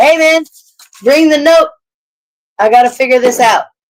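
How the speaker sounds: calling out loudly, as if from afar. Playing a character walking back to the inn, hollering out to D. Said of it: "I'm gonna holler out at D".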